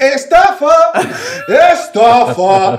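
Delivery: play-acted, high-pitched shout. Retelling how a man started shouting in the office, imitating someone shouting. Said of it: "Empezó a gritar en la oficina".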